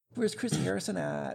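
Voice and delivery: high, mocking put-on voice. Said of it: "and be like".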